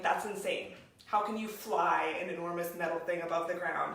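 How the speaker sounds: ordinary delivery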